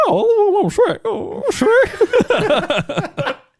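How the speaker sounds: stretched-out, very high-pitched voice. Defending their earlier impression to the others: Donkey impression. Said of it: "my donkey impression was spot on?".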